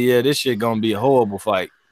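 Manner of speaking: ordinary delivery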